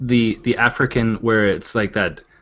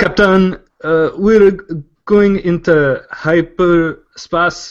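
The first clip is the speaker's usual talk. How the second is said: put-on Portuguese accent, much higher pitch; 7 semitones higher, 5 dB louder than usual. Reading the big audition line for a sci-fi show, in an attempted Portuguese accent. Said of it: "You got to try a Portuguese accent once".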